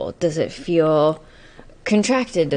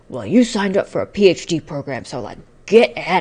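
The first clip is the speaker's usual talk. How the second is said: very rough, gruff voice; 3 dB louder than usual. Describing inner parts debating homework versus TV, voicing one in a very gruff voice. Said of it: "a very gruff voice that's like".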